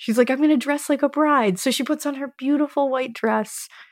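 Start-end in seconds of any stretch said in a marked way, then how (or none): 0.3-1.6 put-on excitement, higher and faster. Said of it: "she's all excited".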